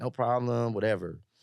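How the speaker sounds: normal talking voice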